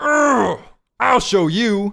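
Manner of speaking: put-on anger. Retrying the line, trying to channel more anger: mock-angry. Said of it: "channel some more anger this time".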